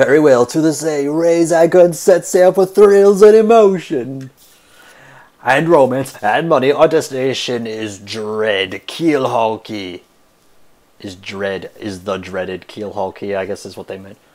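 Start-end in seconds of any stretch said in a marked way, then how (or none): 0.0-10.0 very loud, booming, high, theatrical, pompous captain voice. Streamer reading a game's ship captain aloud, in a ship captain character voice. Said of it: "My men have already loaded our cargo and supplies. / ahoy, I was wise to choose you as captain".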